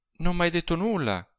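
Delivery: sweet, gently reproachful tone. She answers Serra, who came back early, with a gentle reproach. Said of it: "lo rimproverò ella dolcemente".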